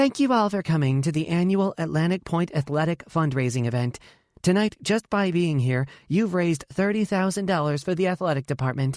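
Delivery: peppy, upbeat, high-pitched voice. Sasha's friend addresses the fundraising event over the speaker, peppy voice. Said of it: "Courtney says in a peppy voice".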